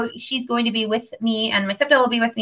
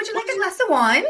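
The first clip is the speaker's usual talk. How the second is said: put-on British accent, very high pitched; 9 semitones higher, 5 dB quieter than usual. Voicing the offer of wine in one's head: British-sounding voice. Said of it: "why do they sound like that?".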